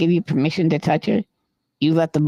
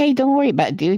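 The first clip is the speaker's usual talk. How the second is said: put-on teasing, mocking tone, higher; 7 semitones higher than usual. Retelling what he said to a driver he was teasing: retelling his own mocking remark. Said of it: "So I'm making fun of him".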